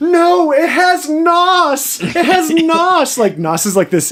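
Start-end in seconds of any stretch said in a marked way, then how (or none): 0.0-3.2 very high, very slow, drawn-out yelling. Recounting a movie street race scene, retelling people shouting. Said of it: "they're just shouting like".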